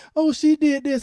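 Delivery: put-on high, tearful, crying child voice. Retelling a daughter coming in to complain: imitating a crying child. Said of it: "when they come in there crying and saying".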